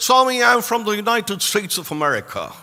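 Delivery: put-on speaking American-accented. Retelling a kneeling boy's answer to swami: imitating an american accent. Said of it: "in an American accent".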